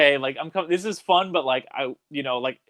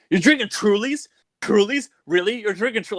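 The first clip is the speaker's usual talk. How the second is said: put-on scornful, needling mocking tease, pitched up; 7 semitones higher than usual. Retelling how a brother reacted to a bartender order: imitating someone mocking. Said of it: "he would give us so much shit".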